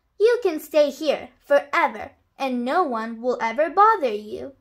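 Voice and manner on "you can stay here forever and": usual speaking voice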